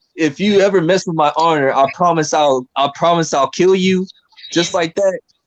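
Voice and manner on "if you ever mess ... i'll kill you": normal talking voice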